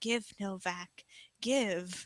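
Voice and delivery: eerie, creepy, very quiet, barely audible whisper. Retelling a sound heard at the end of a match: imitating a creepy whisper. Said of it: "a whisper saying".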